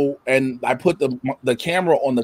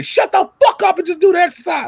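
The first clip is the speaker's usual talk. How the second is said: loud, high-pitched shouting. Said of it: "you would hear me say".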